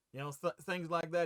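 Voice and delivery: plain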